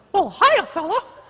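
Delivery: put-on high cartoon mouse voice. Asked to do the Mickey Mouse voice, Mickey Mouse voice. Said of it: "do the Mickey Mouse voice".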